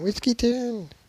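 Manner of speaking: American accent, very high. Showing how the place name sounds in an American accent. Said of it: "American accent".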